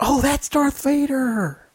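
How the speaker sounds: high, slow, excited voice, dawning realization.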